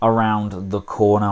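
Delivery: normal talking voice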